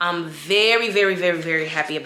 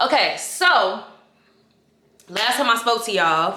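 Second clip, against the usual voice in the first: loud yelling voice, higher in pitch; 5 semitones higher than usual. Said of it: "why am I yelling?".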